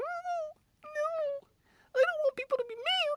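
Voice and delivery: very high, slow, drawn-out cartoon squeak. Mocking studio executives caving to fan backlash, in a Mickey Mouse voice. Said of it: "did your ass do it in the Mickey Mouse voice?".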